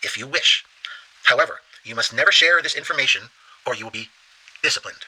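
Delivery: plain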